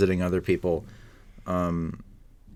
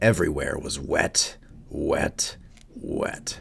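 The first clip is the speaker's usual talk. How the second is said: narrator voice trailing into whisper. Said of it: "your Alec Baldwin impression".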